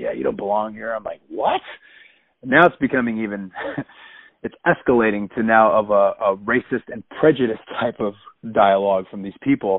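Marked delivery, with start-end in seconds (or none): 0.0-0.9 quiet, muttered under-the-breath aside. Retelling what another friend said during a confrontation, under her breath. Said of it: "like under her breath".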